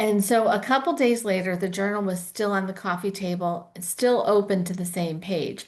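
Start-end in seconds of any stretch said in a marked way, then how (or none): none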